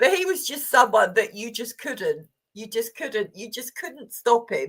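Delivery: words broken up by laughter. Describing a man, the speaker apologizes for laughing: laughing while talking. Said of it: "sorry, I'm laughing".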